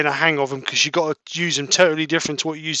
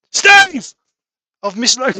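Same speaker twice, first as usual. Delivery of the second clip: very loud, high-pitched calling shout; 8 semitones higher, 8 dB louder than usual. Reading out a viewer's comment aloud: imitating someone shouting. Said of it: "Scott's shouting at me".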